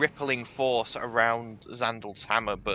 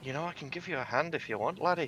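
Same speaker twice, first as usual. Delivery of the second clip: soft, hushed half-whisper; 4 semitones higher, 8 dB quieter than usual. Game master as Bosun, floating by Xandal's ear, Bosun half-whispering into an ear. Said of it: "sort of whispers into your ear".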